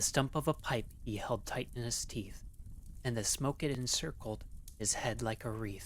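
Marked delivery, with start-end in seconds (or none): none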